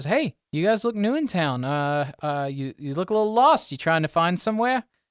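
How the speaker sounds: high gnome voice. Voicing a gnome who walks up to the lost players: voicing a gnome. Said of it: "You see a gnome just kinda walk up".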